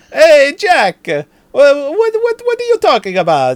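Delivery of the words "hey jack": put-on awful Italian accent, very loud and high. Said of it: "the worst Italian accent".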